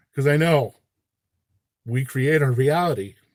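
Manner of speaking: voice catching with emotion. Explaining that we create our own reality, choked up. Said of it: "I get choked up sometimes".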